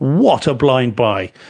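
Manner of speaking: each word given extra, emphatic weight. Reading out a viewer's tweet again: emphatic reading. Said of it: "Let me put some emphasis on this".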